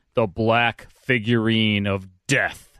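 put-on theatrical, dramatic old-radio announcer voice. Wishing he had been the announcer for a 1953 title: dramatic announcer voice. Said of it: "I could have been the announcer on that".

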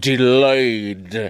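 slow, drawn-out word, every bit carefully enunciated. Re-saying a word from a news intro while enunciating: Bill Cosby voice. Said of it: "sounding like Bill Cosby".

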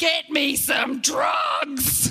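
high-pitched screaming. Recounting arriving at the hospital during labour, retelling a scream. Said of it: "I'm screaming".

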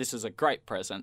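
ordinary talk, nothing marked

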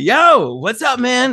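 put-on New York Long Island accent. Retelling how a man greeted you on a call you answered, imitating a Long Island accent. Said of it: "he's got that uh you know, uh Long Island accent".

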